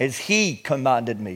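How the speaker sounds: low, soft, slow stress on he.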